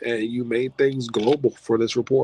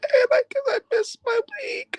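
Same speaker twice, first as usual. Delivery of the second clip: high, sobbing cry. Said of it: "I'm sorry that I'm crying".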